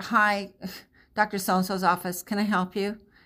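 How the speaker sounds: grudging, annoyed, put-upon voice. Describing how staff answer the office phone, an annoyed receptionist greeting. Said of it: "they're annoyed to take the phone call".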